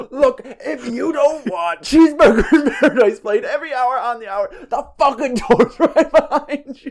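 very high, shrill, furious screaming tirade. Telling how a boss chewed out his employees: retelling a scream. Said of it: "he's screaming at them".

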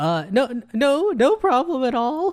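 acted awkward, high pitch. Recapping a show, retelling Olivia answering Peter: imitating Olivia's awkward reply. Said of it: "Olivia kind of goes very awkwardly".

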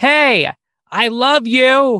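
put-on very loud, very high drunk holler. Demonstrating someone who yells at everybody, drunk-sounding yelling. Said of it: "Now you sound like you're drunk".

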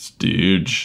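low, gravelly voice. In a role-play scene, answering a question in John's deep raspy voice. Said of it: "John's voice is deeper and raspier".

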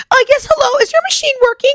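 very high, put-on customer-service phone voice. Retelling how Darla called McDonald's on the phone, in Darla's high customer-service voice. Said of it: "like her high-pitched like customer service voice".

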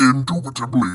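put-on demonic voice. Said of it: "my best demonic impression".

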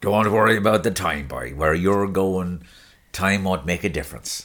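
put-on performed rural Irish accent. Asked to do the bit again, performing a quote in a put-on rural Irish accent. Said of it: "Do it again".

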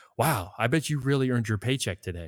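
sincere, genuinely positive tone. Saying one phrase two ways, first the positive version: positive sincere tone. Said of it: "this is the positive side".

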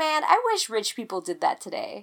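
ordinary delivery

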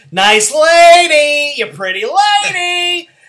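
very high, loud, slow squeal with drawn-out lady. Joking about a scene and imitating Jerry Lewis: Jerry Lewis voice. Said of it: "I was waiting for Jerry Lewis".

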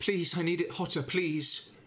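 put-on young boy's voice. Narrator voicing a young blacksmith at his forge, in a younger voice. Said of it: "not a mature, firm voice, but a younger voice".

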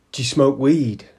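ordinary delivery

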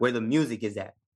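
plain

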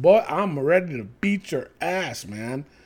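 put-on pissed-off tone. Describing a guy's best promo against Karrion Kross, imitating him sounding pissed off. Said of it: "He talked like he was pissed".

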